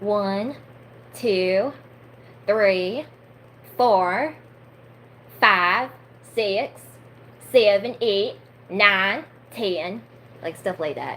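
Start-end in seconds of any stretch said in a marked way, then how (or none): 0.0-10.0 thick southern drawl, very slow and loud. Counting to ten to show off an accent, in a heavy southern accent. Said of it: "counting helps me make a southern accent".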